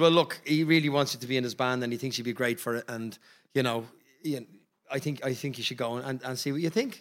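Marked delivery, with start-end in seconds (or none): none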